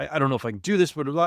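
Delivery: fast, put-on panicked stammering and sputtering babble. Retelling panicking mid-swim to a paddleboarder: imitating own panicked sputtering. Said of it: "just started sputtering about, like, I, I'm panic-".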